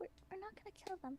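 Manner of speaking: tiny, very quiet, barely audible little voice. A player voices Alice speaking in Harper's ear, in a tiny little Alice voice. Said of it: "tiny little Alice voice in Harper's ear going".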